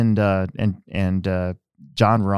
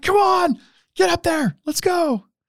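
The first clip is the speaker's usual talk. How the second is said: very high, shrill, screamed cheering. Retelling cheering at a race on TV: imitating own screaming. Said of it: "screaming at the T V".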